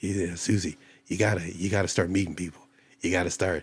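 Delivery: dropped low and soft. Quoting what Doctor Mack tells Susie, in a fake Doctor Mack voice. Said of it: "This is my fake voice for him".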